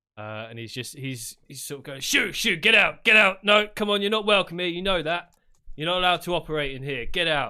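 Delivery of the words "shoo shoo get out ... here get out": high, very loud shouting. Voicing a bar owner who throws robed people out: bar owner shouting. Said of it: "the bar owner shouting at a few people".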